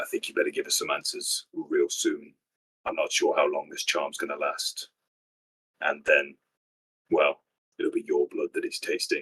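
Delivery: menacing, threatening half-whisper. Playing a character threatening a captive, half-whispering it into his ear. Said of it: "whispering it into his ear".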